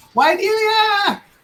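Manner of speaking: very high-pitched screaming. Voicing a captain who calls for a crew member: screaming captain. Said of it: "And he screams".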